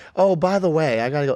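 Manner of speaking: put-on casual delivery. Retelling what a partner said at dinner: imitating someone saying it casually. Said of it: "she said casually".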